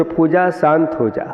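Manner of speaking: ordinary talk, nothing marked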